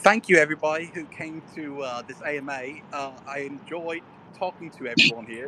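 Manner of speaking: lousy, fake, put-on British accent. Thanking everybody who came to the AMA: put-on British accent. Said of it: "this is my British accent. It sucks".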